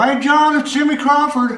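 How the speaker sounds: very high-pitched talking voice. Retelling a late-night phone call from Jimmy Crawford, imitating his high voice. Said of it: "He talked really high like that".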